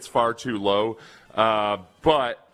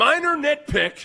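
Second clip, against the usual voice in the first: enraged, furious voice, very high-pitched. Reading a comment about the Texans aloud in a furious voice. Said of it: "I'll try to say this in a furious voice".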